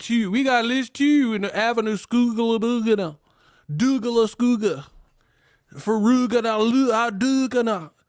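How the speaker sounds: exaggerated high, wild Baltimore accent, near gibberish. Mocking how people talk in Baltimore: mock Baltimore accent. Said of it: "but that accent is wild".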